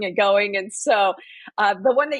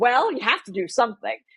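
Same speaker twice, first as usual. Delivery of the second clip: mock snarky delivery. Retelling what a coworker said in a meeting: imitating a snarky remark. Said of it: "in a rather snarky way said".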